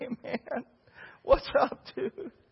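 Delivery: high, drawn-out, crying-sounding casual drawl. Telling about boys being baptized, imitating how they all talk. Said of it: "They all talk like that".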